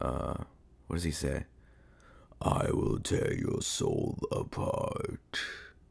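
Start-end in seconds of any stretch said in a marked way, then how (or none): 2.4-5.4 very slow, rough, creaky voice, every word dragged out. Trying an impression of an iconic horror villain voice: Doug Bradley Pinhead impression. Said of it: "can I do it right now".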